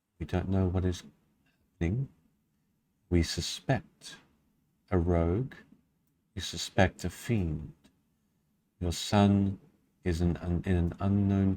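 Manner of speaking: gentle, soft-spoken, soft, quiet voice. The narrator voices a voice the listener hears in a druidic tongue: soft voice. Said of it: "You hear as well as see a soft voice".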